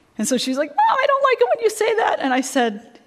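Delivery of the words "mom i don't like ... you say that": put-on very high, rising, wound-up child's voice. Retelling an argument over dishes: imitating daughter's high-pitched voice. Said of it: "her voice went up like this".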